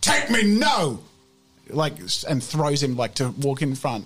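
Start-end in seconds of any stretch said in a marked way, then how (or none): 0.0-1.0 high, loud, angry delivery. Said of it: "he slaps him in the face".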